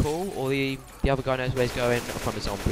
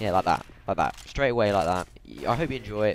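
normal talking voice

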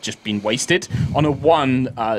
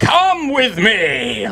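big armored knight voice, swooping up high; 8 semitones higher, 4 dB louder than usual. Asked whether [name] can do one, speaker tries a Reinhardt voice. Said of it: "Can [name] do a Reinhardt voice?".

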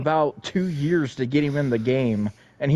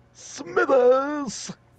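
very high, pitched-up delivery; 12 semitones higher than usual. Joking with another player, doing a Mister Burns voice. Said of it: "He's like".

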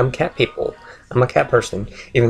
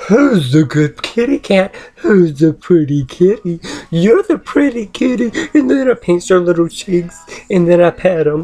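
put-on cooing baby-talk voice; 8 semitones higher, 5 dB louder than usual. Showing how the speaker talks to little kitty cats, in baby talk. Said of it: "cats have made me start, baby talk".

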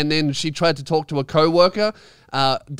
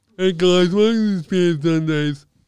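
talking with a mouth expander in; 2 semitones higher than usual. Saying the show welcome line, talking with expander in mouth. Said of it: "I sound deaf".

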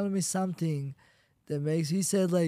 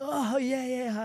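high, taunting, mocking laughter; 5 semitones higher, 4 dB quieter than usual. Retelling a heckler in the stands laughing at him: imitating a heckler laughing. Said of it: "he's laughing at me".

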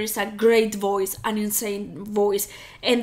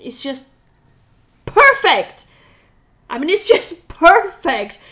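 high, loud, excited freaking-out gush. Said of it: "I'm freaking out with her accent".

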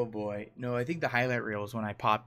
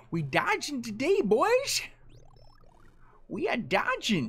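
put-on very high, slow, swooping old man drawl; 4 dB louder than usual. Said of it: "Sound like an old man".

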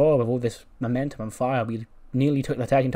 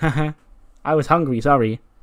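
loud, talking through open laughter; 2 semitones higher, 5 dB louder than usual. Speaker retells a woman who ate all the food answering: imitating someone laughing. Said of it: "she's just laughing, going".

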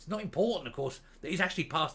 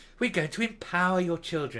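put-on upbeat, cheery, sunny official tone; 4 semitones higher, 4 dB louder than usual. Mocking the people behind a teaching standards document, using a put-on sunny voice. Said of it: "You have to say it with a sunny voice".

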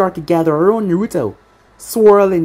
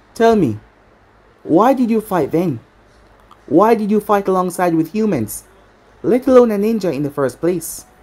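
ordinary delivery

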